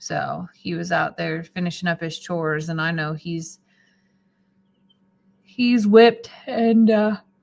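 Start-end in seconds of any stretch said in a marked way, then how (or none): 5.4-7.2 words stretched by a high yawn. Speaker tells about a man finishing his chores, yawning. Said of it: "sorry, I'm yawning now".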